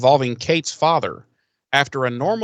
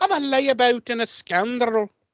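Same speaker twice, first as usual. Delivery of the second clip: very high, drawn-out put-on accent slipping Scottish; 10 semitones higher than usual. Voicing the character Liam as a layabout: put-on accent gone a little Scottish. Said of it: "that was a little Scottish".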